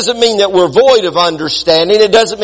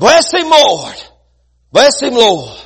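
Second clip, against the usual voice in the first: raised, swooping voice with slight speech impediment; 3 semitones higher than usual. Recalling an old man calling out while the preacher preached, imitating a speech impediment. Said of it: "had a little bit of a speech impediment".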